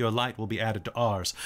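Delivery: low, robotic, mechanical voice with reverberating echo. Voicing a being that turns and speaks to the listeners in Elven: mechanical, echoing voice. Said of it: "In this mechanical, echoing voice".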